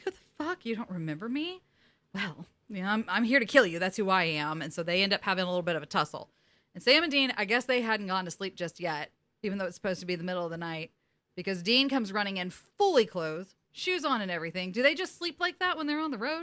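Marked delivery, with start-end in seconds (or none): 0.0-4.6 put-on offended tone. Retelling a scene where a woman answers who she is: imitating someone offended.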